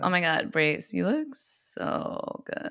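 soft, breathy, creaky vocal fry. In a chat about vocal fry, showing how to do it: vocal fry. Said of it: "My favorite way to do vocal fry".

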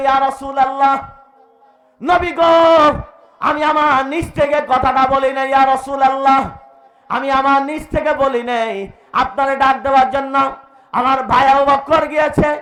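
high, loud, trembling, frightened pleading voice.

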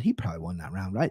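composed, calm, low, quick murmur. Recounting a night out, imitating calm English guys. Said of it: "The English guys came in very calm".

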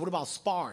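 normal talking voice

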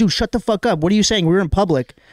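ordinary talk

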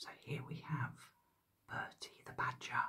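hushed, put-on narrator voice. Introducing Bertie the Badger, a whispered David Attenborough voice. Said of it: "I'm having to whisper in my best David Attenborough voice".

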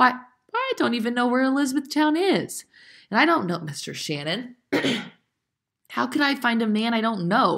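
scared, halting stammer. A girl answers her grandfather's request, frightened, tripping over words. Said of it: "In her fright, she was tripping over her words".

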